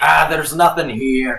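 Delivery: rough, grunting character voice. Voicing Seal speaking in Goblin, the player uses a rough, grunty voice. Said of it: "a rough, grunty sort of voice".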